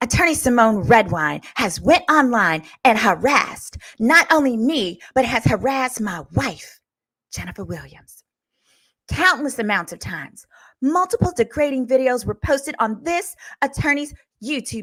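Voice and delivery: mock cheeky, sassy little voice, read with feeling. Reading a man's statement aloud in a mock-sassy voice. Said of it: "I'm going to do it in his sassy little voice".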